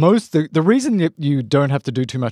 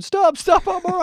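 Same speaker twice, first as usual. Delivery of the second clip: mock, very high screaming voice. Retelling how a car accident victim screamed at a man trying CPR on him. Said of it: "and he's screaming".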